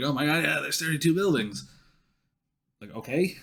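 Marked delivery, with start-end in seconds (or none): 0.0-1.6 put-on excitement, much higher. Speaker mocks people getting excited just hearing a number, imitating excited people. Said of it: "and now they're getting excited".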